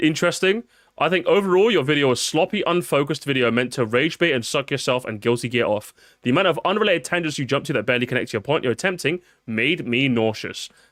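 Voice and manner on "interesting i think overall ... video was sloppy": plain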